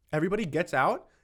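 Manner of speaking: ordinary talk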